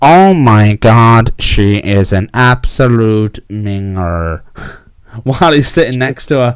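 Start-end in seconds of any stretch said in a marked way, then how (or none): 0.0-4.4 loud, slow, robotic computer-synthesized voice. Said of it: "the Stephen Hawking voice".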